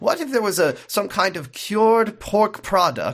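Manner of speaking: loose put-on Eastern European accent. Imitating an actor's line from a show: vaguely eastern european accent. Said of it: "I'm doing the vaguely Eastern European accent".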